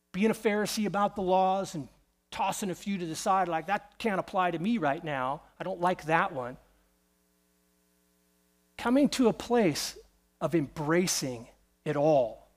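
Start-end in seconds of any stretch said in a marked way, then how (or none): none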